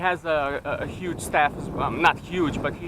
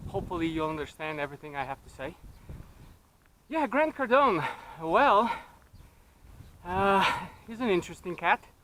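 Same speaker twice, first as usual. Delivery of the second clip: a little out of breath. Talking while walking uphill on a daily walk: a little out of breath. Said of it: "so I'm a little bit out of breath".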